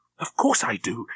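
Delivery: urgent, pressing, insistent tone. Reading a woman answering a sharp question, urgent. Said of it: "she said urgently".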